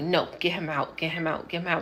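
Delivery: acted-out angry, tearful, furious crying outburst. Retelling demanding that a man leave the room: retelling a furious, tearful outburst. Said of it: "I'm crying. I'm furious".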